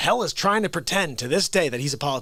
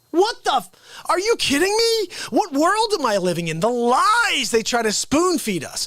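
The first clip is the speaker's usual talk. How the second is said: agitated, upset ranting, pitched very high; 10 semitones higher, 3 dB louder than usual. Ranting about news coverage of the rioting: getting upset. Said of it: "I'm sorry I'm getting upset".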